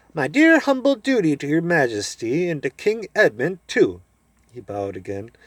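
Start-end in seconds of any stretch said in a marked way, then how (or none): 0.2-4.0 shrill, piping, sing-song little mouse voice. Narrator reads a bowing character greeting Her Majesty and King Edmund: shrill, piping voice. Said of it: "said in his shrill, piping voice".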